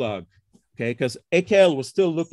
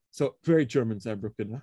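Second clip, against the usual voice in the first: ordinary talk, nothing marked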